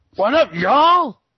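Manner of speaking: shrill, high, very loud blasting shout. Greeting everyone at the start of the show, very loud. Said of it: "that was very loud".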